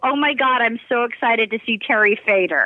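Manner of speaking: ordinary talk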